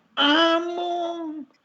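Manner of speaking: exaggerated, affected, drawn-out fake intonation on amo. Explaining fresa speech in spanish, affected fake intonation on 'amo'. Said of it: "la entonación de este amo, ¿sí? No puede ser más falsa".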